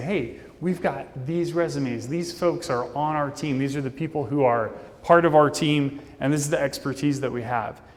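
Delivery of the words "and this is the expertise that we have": normal talking voice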